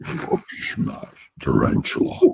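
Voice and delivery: put-on brute monster voice. Repeating a line about a tarantula in a Hulk voice. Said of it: "does the Hulk voice too".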